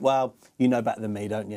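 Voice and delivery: sarcastic, deferential, passive-aggressive, pointed tone. Retelling the manager's reply to an interviewer: imitating Pep being passive-aggressive. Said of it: "he's the king of passive aggressiveness".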